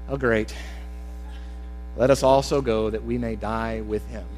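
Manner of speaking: voice drops very low, soft and slow. Reading Thomas's words to the disciples from a Bible verse, in an Eeyore voice. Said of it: "I read this like, I don't know if you remember Eeyore".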